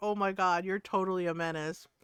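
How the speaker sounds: imitated cackling laugh. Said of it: "Nora was cackling".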